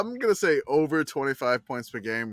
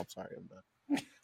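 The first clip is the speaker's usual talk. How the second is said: ordinary talk, nothing marked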